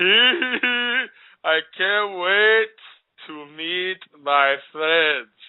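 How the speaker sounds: put-on very slow, sozzled-sounding drunken drawl. Mocking a man's voice in a promo video, imitating a drunk homeless-sounding voice. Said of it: "he sounds like a drunk, homeless".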